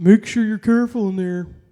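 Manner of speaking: very loud, high-pitched, jokey, funny tone. Retelling what a guy at the gas pump told him, mimicking the guy's funny tone. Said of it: "like in a in a funny tone".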